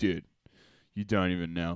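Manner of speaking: mock flat, low delivery. Retelling asking Dan if he's a wrestling fan, imitating Dan deadpan. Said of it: "deadpan face".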